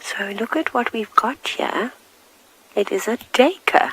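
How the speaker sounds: close, hushed whisper. Speaker whispering because an animal is quite close to the car, whispering. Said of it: "And I'm whispering".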